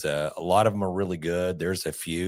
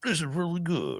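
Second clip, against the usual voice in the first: very high-pitched put-on voice; 11 semitones higher than usual. Doing an impression of John praising a sour beer: impression of John. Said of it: "you want me to do my impression of John?".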